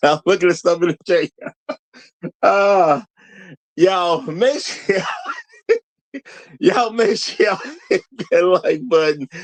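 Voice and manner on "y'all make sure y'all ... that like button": talking through laughter, swooping pitch. A host tells the chat to hit the like button, laughing while talking. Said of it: "I'm laughing at somebody in the chat".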